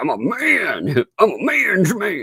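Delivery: very slow, puffed-up tough-guy bragging, man drawn out. Retelling how someone came into the chat: imitating a tough big man. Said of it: "talk like he was some big man".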